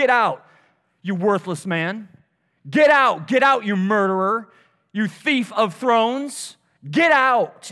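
acted-out angry shout. Speaker retells a man throwing rocks at someone leaving, acting out his angry shout. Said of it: "he's just shouting".

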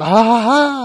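very loud, high-pitched burst of laughter. Retelling a film scene where a character laughs: Jack Nicholson laugh. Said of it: "he does his Jack Nicholson".

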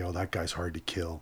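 usual speaking voice

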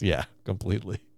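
put-on sarcastic tone. Retelling a coworker's answer to whether he is disappointed, mock-sarcastic reply.

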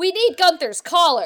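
loud, shrill, outright yelling. In character, demanding a missing cat's collar: yelling. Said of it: "why you're yelling at me about a cat's collar".

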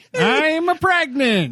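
put-on Italian accent. Doing a take on Jen with a bad Italian accent. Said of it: "I was going for Italian".

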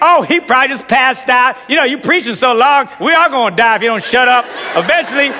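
ordinary delivery

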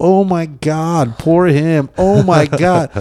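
put-on very slow, high, drawn-out lady's cry. Recounting a video, the speaker imitates a lady on the plane yelling. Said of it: "there's a lady yelling like".

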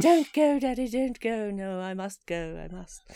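old British war-movie style voice, put-on pastiche. Joking about what Daddy means, acting out a scene in an old British war movie voice. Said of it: "all British war movies".

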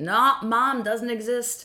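put-on Scottish accent. Retelling an argument with a cab driver, imitating a Scottish cab driver. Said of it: "I don't know why I made him Scottish".

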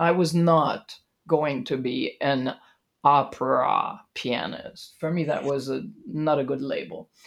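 low, heavy sarcasm dripping through. A pianist answering an interviewer's question, sarcastic. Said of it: "The sarcasm dripping from your voice comes across very clearly".

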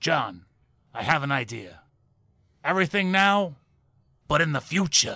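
put-on gruff old-man voice.

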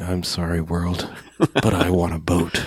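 mock-resigned tone. Speaker describes an actor's performance, imitating a resigned voice. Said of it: "Something in the tinge of his voice going".

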